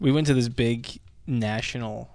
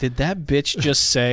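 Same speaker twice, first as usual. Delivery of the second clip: normal talking voice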